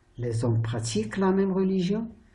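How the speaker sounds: voice lifts at the end on religion. French lesson, turning a statement into a question: rising question tone on religion. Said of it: "je change d'intonation. Je change de façon de prononcer la phrase".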